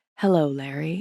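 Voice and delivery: low, soft, sultry murmur. Retelling someone greeting Larry in an elevator, in Tom Brady's sultry voice. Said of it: "I hear this sultry, like, Tabasco vanilla whiskey".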